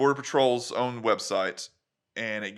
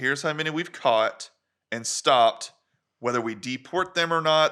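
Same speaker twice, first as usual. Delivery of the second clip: usual speaking voice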